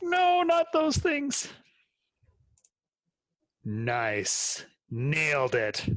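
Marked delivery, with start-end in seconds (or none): 0.0-1.5 high, slow, stretched-out, cartoonish mock dismay. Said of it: "I was like".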